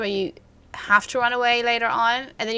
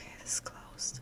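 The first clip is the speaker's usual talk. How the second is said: very quiet, soft, hushed whisper. Exploring alone, unsure why they are keeping their voice down, whispering. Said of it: "I don't know why I'm whispering".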